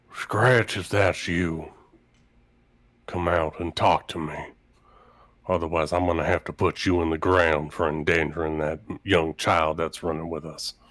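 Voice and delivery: loud theatrical whisper. A character steadies himself and calls to someone who may be hiding, in a loud stage whisper. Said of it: "he does a like a loud stage whisper".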